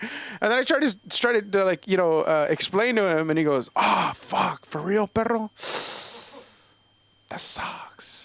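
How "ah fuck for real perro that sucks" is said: put-on, slow, drawling voice.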